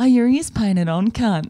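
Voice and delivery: reenacted whisper. Reminding the listener what they said close to the speaker's face; retelling a whisper. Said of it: "and then you whispered".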